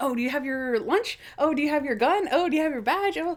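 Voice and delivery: put-on high, giddy, excited voice. Retelling a TV scene where characters are giddy: imitating giddy excitement. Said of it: "they are giddy".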